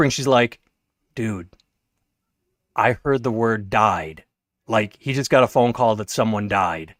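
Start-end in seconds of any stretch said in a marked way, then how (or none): 1.1-6.8 soft, hushed stage whisper under the breath. Retelling what a woman said after coming over during a game: imitating a half-whisper. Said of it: "she starts whispering".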